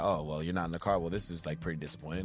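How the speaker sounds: muttering under breath. Retelling a scene where Nama mutters: Nama muttering under his breath. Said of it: "Nama says under his breath".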